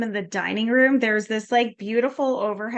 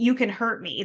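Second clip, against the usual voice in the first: acted desperate, begging, pleading tone. Retelling a movie character's line, imitating a desperate plea. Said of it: "Then she gets, like, desperate".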